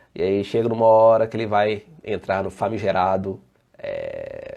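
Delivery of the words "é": low, drawn-out, hesitant stalling filler sound. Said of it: "é porque ele tá pensando".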